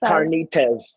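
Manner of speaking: "carnitas" with flat English vowels.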